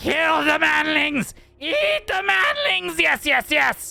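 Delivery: high, shrill, shrieking, rasping rat-like creature screech. Game master voicing the leader of a rat swarm: screeching rat creature voice. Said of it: "As it screeches out".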